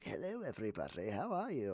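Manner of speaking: swooping, animated character voice, pitch swinging up and down. Showing the community call his other characters: Nigel voice. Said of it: "do my Nigel voice".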